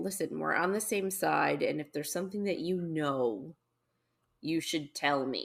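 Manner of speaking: plain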